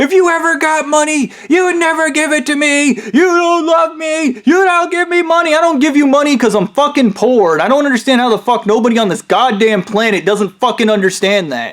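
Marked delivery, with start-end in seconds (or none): 0.0-5.6 high, mock accusing screaming. Retelling an outburst from the speaker's sister, imitating her screaming. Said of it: "my sister was screaming about".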